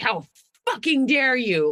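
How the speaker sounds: loud, high, outraged and affronted yelling. Retelling a man's reaction when caught out on the phone, imitating someone yelling. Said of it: "starts yelling at me".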